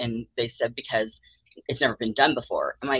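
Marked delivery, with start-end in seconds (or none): none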